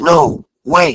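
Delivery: urgent, pleading male voice. Retelling a voice caught on a video recording, imitating an urgent male voice. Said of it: "just like that again".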